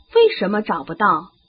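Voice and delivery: plain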